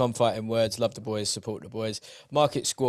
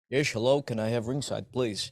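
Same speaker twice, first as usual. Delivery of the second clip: put-on Dutch accent, Dutch-accented English. Suggesting how someone could have blagged ringside seats, in a dutch accent. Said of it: "started speaking in a Dutch accent".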